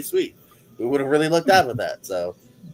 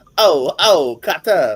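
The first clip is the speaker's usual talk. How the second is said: put-on Brooklyn tough-guy voice, louder; 8 dB louder than usual. Doing an impression during a quiz: John Travolta impression. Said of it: "my John Travolta, uh, Cotter impression".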